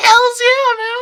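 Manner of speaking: big, shrill, very high, very loud squeaky yell. Recapping a scene where Takashi answers her question, imitating Takashi's squeaky yell. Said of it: "he's doing this big fucking squeak".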